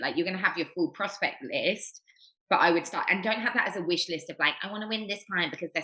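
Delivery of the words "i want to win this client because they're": little, fast, whiny, complaining voice. Advising against treating prospects as a wish list, mock whingy voice. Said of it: "you do that little whingy voice".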